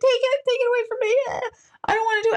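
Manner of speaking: tearful, crying, very high pleading voice. Retelling being handed a gun at the range: retelling own crying plea. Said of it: "And I was, like, crying".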